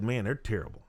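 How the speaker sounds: ordinary talk, nothing marked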